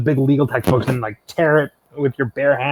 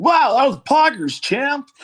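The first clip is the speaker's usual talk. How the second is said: Gen Z announcer commentator voice, higher; 11 semitones higher than usual. Butting in on the wrestling match when prompted: Gen Z announcer voice. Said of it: "do your announcer voice".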